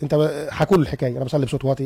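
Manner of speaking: ordinary delivery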